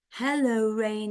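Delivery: ordinary delivery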